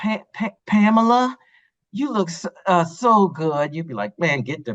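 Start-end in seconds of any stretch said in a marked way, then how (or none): 0.0-3.7 very slow, halting, stammering, full of fillers. Acting out an unconfident man complimenting a date: mock-hesitant, stammering. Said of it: "I didn't sound confident enough".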